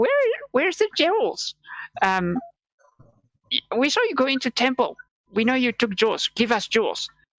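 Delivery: sweet, cute goblin voice, high and swooping. Retelling how the DM voiced the goblins, in a very cute goblin voice. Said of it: "in a very cute goblin voice".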